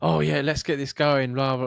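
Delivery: loud, over-cheery, upbeat hype voice. Retelling how a manager tries to motivate staff: imitating an upbeat manager. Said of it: "in a really positive mood".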